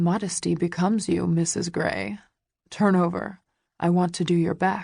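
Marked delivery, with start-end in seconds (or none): none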